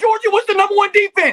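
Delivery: very high, very loud, shrill, heated angry shout. Arguing with another speaker about a football defense: angry. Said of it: "when you get angry does your voice get like that".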